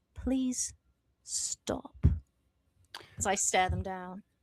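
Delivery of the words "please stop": hushed, soft, close whisper. Speaker staring people down, telling them to stop, whispered. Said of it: "my voice whispers in their ear, like".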